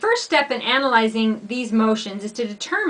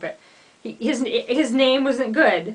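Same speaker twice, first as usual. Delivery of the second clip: speaking through laughter, laughing through the words. Reacting to a legal claim they just read aloud, laughing while talking. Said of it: "I'm laughing".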